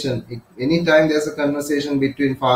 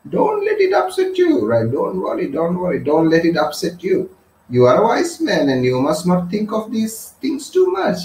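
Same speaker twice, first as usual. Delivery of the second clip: condescending, patronizing, in-charge swooping sing-song tone; 3 semitones higher than usual. Showing how a person in charge talks down to someone, patronizing. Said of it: "then you talk like this".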